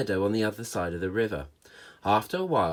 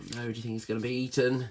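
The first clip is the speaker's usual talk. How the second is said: ordinary delivery, nothing marked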